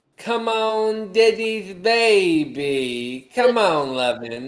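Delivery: put-on, very slow, high, doting drunken cooing. Retelling how a drunk man called his dogs: imitating a drunk man. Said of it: "he was all drunk".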